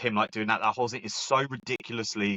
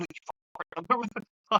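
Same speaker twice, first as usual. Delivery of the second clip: put-on angry yelling voice, higher pitch; 11 semitones higher than usual. Retelling a movie phone scene, imitating Jordan Belfort angry. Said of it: "He's getting really angry".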